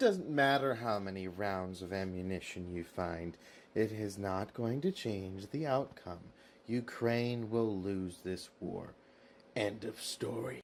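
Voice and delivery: put-on menacing delivery, deep and intimidating. Declaring the war's outcome to another speaker: deeper voice to sound intimidating. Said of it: "Are you making your voice sound deeper to try and sound intimidating?".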